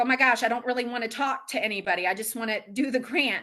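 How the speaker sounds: plain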